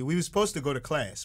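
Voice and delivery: plain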